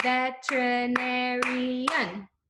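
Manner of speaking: very slow, syllables clapped out one by one. Showing a class how to say a long word: said slowly, clapping syllables. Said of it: "let's say it slowly".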